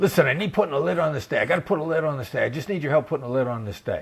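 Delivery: panicked, pleading, fast, frantic rush of words. Retelling what a caller said one night: imitating a frantic caller. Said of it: "'cause he sounded frantic".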